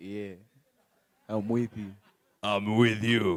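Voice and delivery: very low, very deep, big bass voice. A young man answers a speaker asking if he is with him: big voice.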